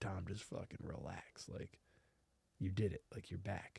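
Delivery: calm, low, soft, soothing, reassuring voice.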